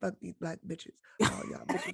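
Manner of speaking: soft muttering under the breath.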